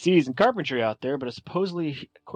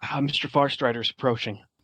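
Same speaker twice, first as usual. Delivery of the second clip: hushed stage half-whisper, kept voiced. A younger man runs up to the guild mentor to warn him, half-whispering. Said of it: "you hear him whisper".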